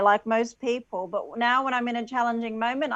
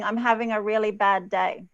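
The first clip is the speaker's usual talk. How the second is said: normal talking voice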